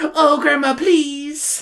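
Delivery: put-on very high, small little-kid voice. Imagining a book character talking like Pym from Smiling Friends. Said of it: "making Samantha talk like a little Pym".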